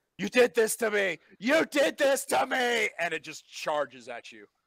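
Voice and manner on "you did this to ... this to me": shrieking, high-pitched monster scream. Game master voices a creature as it charges at a player, creature screaming. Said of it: "It's screaming".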